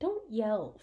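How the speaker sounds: ordinary delivery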